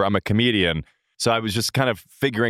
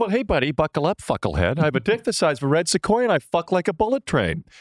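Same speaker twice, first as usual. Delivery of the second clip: high voice, pitch swooping up and around; 6 semitones higher than usual. Doing an impression of Tom from Succession after a missed interview: Matthew Macfadyen as Tom impression. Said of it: "I do an impression of you".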